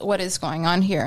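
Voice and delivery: normal talking voice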